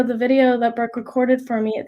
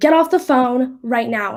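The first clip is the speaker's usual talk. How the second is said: put-on brusque, rude, blunt tone. Retelling what the man at the bathroom door said to her: imitating someone speaking rudely. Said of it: "so rudely".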